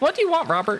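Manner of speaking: very high little bird voice.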